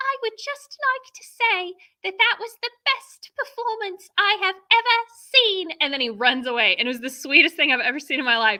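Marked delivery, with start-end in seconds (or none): 0.0-5.7 put-on tiny British child voice, very high-pitched. Retelling what a small boy said after a school show, imitating a british child. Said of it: "imitating a British child".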